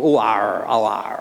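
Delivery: very slow, drawn-out, put-on West Country yokel accent. Joking about how people picture a shepherd: put-on country yokel voice. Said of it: "a kind of country yokel".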